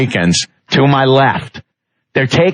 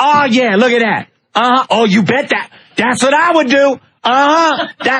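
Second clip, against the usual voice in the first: very high, loud hollering; 10 semitones higher than usual. Speaker retells a woman at a movie in the theater: imitating a woman yelling.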